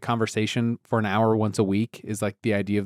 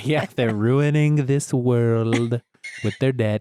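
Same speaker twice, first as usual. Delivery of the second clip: put-on brash politician voice; 4 dB louder than usual. Riffing on a joke with the others: Donald Trump impression. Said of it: "Trump's so fun to do, like, as an impression".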